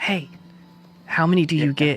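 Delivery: put-on whisper. Telling a card game story, acting out her whispering over to Rosari. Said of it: "she whispers over to Rosari".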